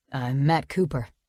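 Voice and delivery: low, gravelly, rough low-pitched voice. Narrator reading a man in a doorway introducing himself, in a low, gravelly voice. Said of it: "he says in a low, gravelly voice".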